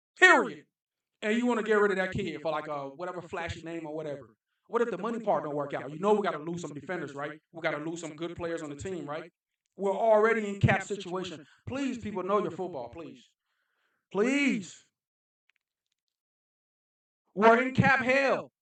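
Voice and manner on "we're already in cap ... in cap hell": worked-up, heated, impassioned delivery. Talking football to viewers of his video, passionate. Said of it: "I get a little passionate".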